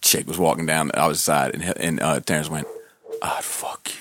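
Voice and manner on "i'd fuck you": mock under-breath muttering, much quieter, slower. Walking through a mall, retelling Terrence's remark under his breath. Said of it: "Like under his breath".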